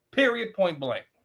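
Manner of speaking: ordinary talk, nothing marked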